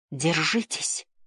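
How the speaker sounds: faint, barely audible, soft words. Liv, balancing on a floating board with the others, speaks barely audible. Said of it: "еле слышно выговорил Лив".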